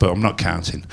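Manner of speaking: ordinary talk, nothing marked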